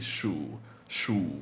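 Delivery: shu with creaky, dipping Mandarin third tone. Showing learners how the mandarin third tone sounds: creaky mandarin third tone. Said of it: "It's creaky".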